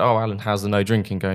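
ordinary talk

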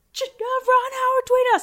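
acted very high, thrilled, excited shriek. Retelling phoning John with the news about the tweet, re-enacting screaming at him. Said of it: "I'm screaming at him".

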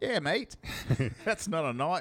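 put-on Australian outback accent. After Crocodile Dundee comes up, doing a Crocodile Dundee impression. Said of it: "Crocodile Dundee?".

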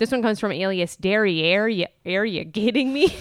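put-on Midwestern accent. Reading out a submitted pun, Midwestern accent. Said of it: "in like a Midwestern accent".

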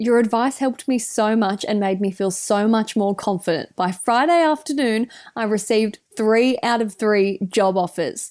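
ordinary talk

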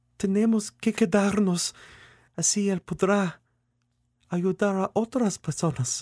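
falsely sweet, very high and slow. A woman in the car answers young Rosa's question, in a pseudo-sweet tone. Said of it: "in that pseudo-sweet tone mothers use to explain adult concepts to young children".

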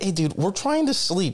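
mock high-pitched yell. Acting out an imagined yell about trying to sleep: imitating someone yelling. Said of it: "he's gonna yell and be like".

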